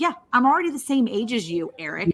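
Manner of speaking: mock delivery, all sassy. Retelling an earlier remark to Eric about being the same age: imitating own sassy remark. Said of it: "I was being all, like, sassy about it".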